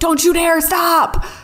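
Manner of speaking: high, pushing, encouraging yell, like a scream. Retelling urging coworkers on during a plank: imitating own screaming. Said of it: "I'm like, screaming".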